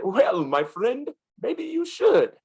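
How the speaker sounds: put-on joking Indian accent, very high-pitched. Retelling the man's joking answer to how this happened, imitating an Indian accent. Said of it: "he turned to me with his Indian voice".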